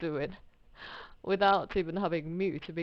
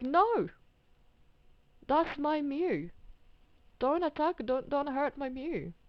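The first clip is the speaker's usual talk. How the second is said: very high begging, "mew" stretched out; 10 semitones higher than usual. Retelling own reaction when mew is attacked: imitating own past pleading. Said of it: "I'm like".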